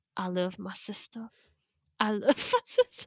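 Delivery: slow, drawn-out, lilting sing-song with big swooping pitch swings. Showing the Jamie Lynn Spears impression done with a friend: Jamie Lynn Spears impression. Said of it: "And she's like".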